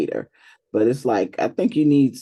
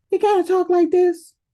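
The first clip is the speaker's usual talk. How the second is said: very high-pitched voice with no bass. Mocking how someone's father talks: imitating a voice with no bass. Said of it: "should have some bass in their voice".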